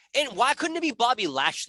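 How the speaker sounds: normal talking voice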